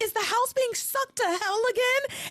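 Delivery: shrill, very high screaming. Retelling a line from the show: imitating Jessica screaming. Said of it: "Jessica screaming".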